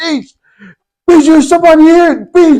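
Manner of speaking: very high, frightened, scared shouting. Recalling a shadow figure walking toward them, re-enacting the scared yelling. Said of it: "I must have started yelling it".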